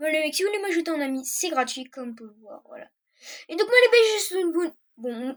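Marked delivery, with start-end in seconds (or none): 3.5-5.4 tongue tripping and restarting the words une bonne. Wishing viewers a good day at the video's end: stuttering. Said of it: "je bégaye".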